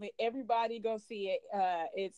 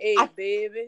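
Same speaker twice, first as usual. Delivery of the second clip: put-on New Orleans accent, louder; 8 dB louder than usual. Imitating a New Orleans guy greeting someone: put-on New Orleans accent. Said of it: "a New Orleans dude come up to me and".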